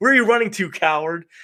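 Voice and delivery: mock, very high, yelled jeering taunt. Retelling calling out to a neighbor at the door: imitating own yell. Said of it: "So I yelled out".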